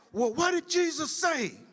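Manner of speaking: very high, mock yelled shout. Recounting how he answered her remark by yelling back, retelling a yell. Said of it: "I yelled back".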